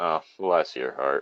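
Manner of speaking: completely deadpan, very low and quiet. Demonstrating how someone might say the phrase, completely deadpan. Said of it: "Or just completely deadpan".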